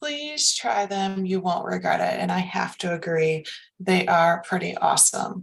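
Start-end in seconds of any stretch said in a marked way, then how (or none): 0.0-2.2 put-on sweet-voiced woman's voice. Speaker quotes a recommendation from Olga, imitating Olga's sweet voice. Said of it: "she says in her sweet voice".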